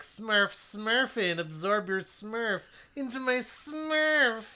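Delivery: squeaky cartoon voice, very slow. Riffing on a Smurfs plot line, doing a Smurf voice. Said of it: "that sounds like a Rick and Morty impression of a Smurf".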